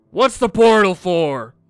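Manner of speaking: loud, booming, bellowing voice. Game master voices a figure across the portal calling to the players: bellowing voice. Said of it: "a bellowing voice".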